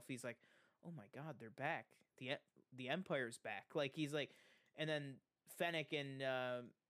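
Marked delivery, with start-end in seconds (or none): 0.8-3.7 put-on quiet whisper. Retelling a show scene, imitating Boba Fett whispering to himself. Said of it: "he just kinda whispers to himself".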